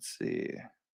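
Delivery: terrible voice, soft, with barely any voice. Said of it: "my voice is just terrible right now".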